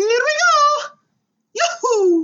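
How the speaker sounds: very high, loud cartoon Italian accent, pitch shooting up. Asked to show a Mario impression, the speaker does a Mario impression. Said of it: "Do it".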